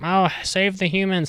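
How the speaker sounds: high, whiny put-on voice.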